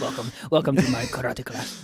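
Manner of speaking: put-on old Japanese man accent, karate master style. Told to improvise as an old man making a hand roll, the speaker plays an old Japanese man. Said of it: "You're you're an old Japanese guy next to me".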